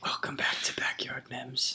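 whispering. Podcast host welcoming listeners back to backyard mems, whispering. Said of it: "We are whispering".

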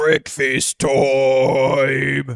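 big booming announcer-like voice. Narrating a game scene, a voice calls out from the gates, booming voice. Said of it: "just this booming voice go".

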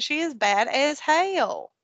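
put-on attempt at a Tennessee accent. Parent describing a hard-headed little girl, in a put-on Tennessee accent. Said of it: "in my best Tennessee accent".

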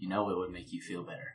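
soft, close, half-whispered voice. Player's character leans in and half-whispers into Vidius's ear: half-whispering in his ear. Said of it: "whisper in his ear".

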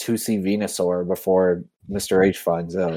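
normal talking voice

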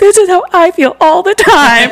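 very high, slow voice on the verge of tears. Retelling what a sister said after a sad episode: imitating sister almost crying. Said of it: "almost crying".

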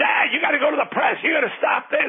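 put-on, very high-pitched screaming. Speaker retells his kids screaming at him to go to the press: retelling kids screaming. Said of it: "they're screaming".

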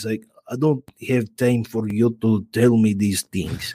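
low, put-on Russian accent. Showing the accent used to throw them off, in a fake Russian accent. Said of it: "but I can speak like this".

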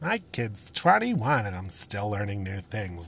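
swooping, sing-song voice. Repeating the line after naming the bit: impression of a Trader Joe's mom. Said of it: "my impression of a mom from Trader Joe's".

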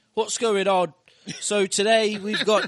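very loud, high put-on hard British accent. Asked to put on a TikTok voice for a clip, put-on hard British accent. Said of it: "I think that's like hard British".

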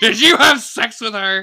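loud, high-pitched, storming accusing tone.

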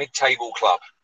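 ordinary talk, nothing marked

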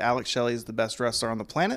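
plain

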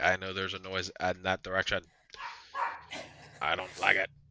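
fast, rattled-off, wary dog voice. Voicing the dog who stares at the door: voicing the dog. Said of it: "She's like".

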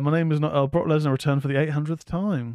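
ordinary delivery

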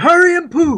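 play-acted, very high-pitched, hollering yell. Retelling yelling at someone to hurry because the plane was leaving, retelling a top-of-lungs yell. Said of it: "I was just yelling it at the top of my lungs".

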